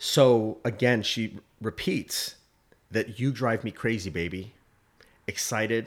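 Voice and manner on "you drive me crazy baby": normal talking voice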